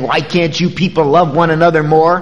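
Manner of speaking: normal talking voice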